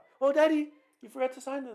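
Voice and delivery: piercing, very high, very loud woman's voice. Retelling how the women who call him daddy sound: high-pitched woman's voice. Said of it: "They have like higher voices".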